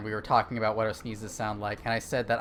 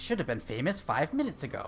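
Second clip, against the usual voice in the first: not-very-good, clumsy, swooping, sing-song cartoon voice; 3 semitones higher than usual. Quoting a Dexter's Laboratory episode: Dexter voice. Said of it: "That's not a very good Dexter voice".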